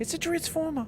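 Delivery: frantic, very high-pitched, squeaky voice. Describing a man's voice in Transformers, imitating a high-pitched voice. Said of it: "he just would like get more and more high pitched".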